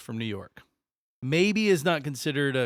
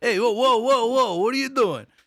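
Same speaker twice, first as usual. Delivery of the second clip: very high, loud, put-on Jersey accent; 9 semitones higher, 6 dB louder than usual. While a trip starting in New York is discussed, in a Jersey Guido voice. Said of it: "I can do my fucking Jersey Guido voice".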